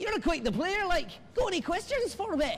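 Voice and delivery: poor put-on Scottish accent. Retelling the little man rattling off questions: bad scottish accent. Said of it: "I'm not very good at the accent".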